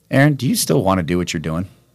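ordinary talk, nothing marked

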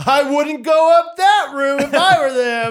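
loud, very high, carrying blurt. Retelling a quiet moment in a movie theater, imitating Hattie's loud blurt. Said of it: "just as loud as you can imagine".

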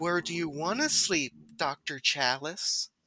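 put-on soft, coy, flirty tone. Retelling a scene where a woman on a bed speaks to a doctor, mock-coy. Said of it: "says all coyly like".

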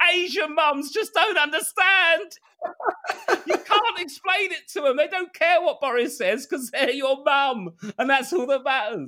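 stressed, very high, top-of-lungs screaming rant. Retelling how a stressed man screamed about his mum, retelling a scream. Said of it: "he just screamed at the top of his voice".

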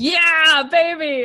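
loud high cheering, shouted out.

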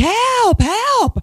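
shrill, very high screaming. Recounting chasing someone and screaming to make a scene; retelling screaming for help. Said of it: "So I'm like screaming".

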